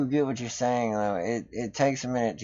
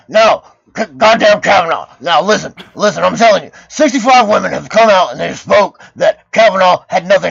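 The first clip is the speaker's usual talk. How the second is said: growly, louder ranting voice; 8 semitones higher, 13 dB louder than usual. Showing how to do a voice after describing it: growly Alex Jones voice. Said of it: "get, like, growly".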